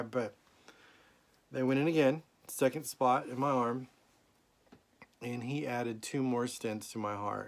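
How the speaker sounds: holding back tears, teary voice. Telling about another heart procedure while trying not to cry: holding back tears. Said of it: "I'm trying not to cry".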